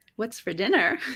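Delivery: lightly teasing, playful, flirty delivery. Asked to say a line three ways, the first way: playful.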